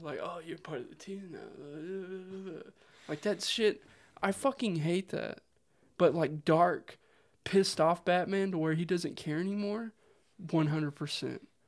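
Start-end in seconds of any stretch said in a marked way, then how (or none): 0.2-2.6 very quiet, slow, playful teasing murmur, words stretched. Quoting a disliked scene with Wonder Woman: playful Batman banter. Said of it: "with his little banter with her".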